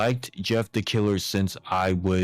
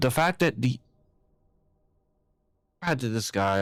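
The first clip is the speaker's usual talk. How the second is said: halting, stuttering start, stumbling over words; 4 semitones higher than usual. Speaker telling y'all about a guy's behavior: stuttering. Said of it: "I think that's why I'm stuttering".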